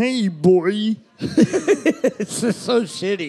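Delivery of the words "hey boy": early, unpolished, old-school cartoon dad voice. Speaker showing how a cartoon voice first sounded, in the original Homer voice. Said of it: "the original like Homer voice is like".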